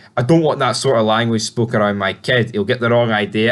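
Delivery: ordinary delivery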